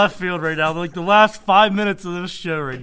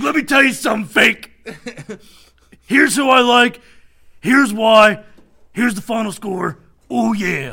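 gravelly wrestler promo voice, higher and louder; 4 semitones higher, 5 dB louder than usual. Picking the game of the week as a wrestler: Macho Man Randy Savage voice. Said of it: "I'm gonna break out the Macho Man".

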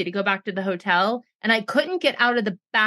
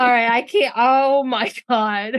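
words spoken through laughter; 4 dB louder than usual. Apologizing to listeners while trying to start reading: laughing while talking. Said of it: "Get control of yourself".

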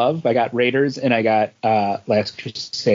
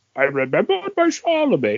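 high put-on voice with wide, reaching pitch swoops; 7 semitones higher than usual. Imitating a son who quotes a favorite movie line: Sean Connery voice. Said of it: "he tries to do the Sean Connery voice".

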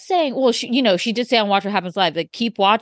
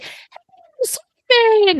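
fake British accent, higher and louder; 14 semitones higher, 4 dB louder than usual. Retelling a movie scene where a character fakes an accent: put-on British accent. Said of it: "she talked to him in a British accent".

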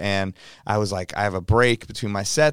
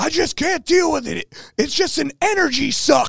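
put-on screaming, pitched very high. Retelling Keanu Reeves on a roof, on the phone to his agent: retelling Keanu Reeves screaming. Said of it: "He's screaming into the phone".

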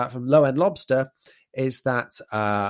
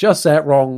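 confident, assured delivery, a bit louder. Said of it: "and with confidence".

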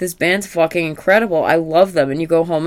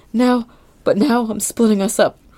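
put-on tearful crying voice, higher; 6 semitones higher than usual. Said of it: "they're both crying".

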